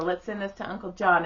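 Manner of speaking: normal talking voice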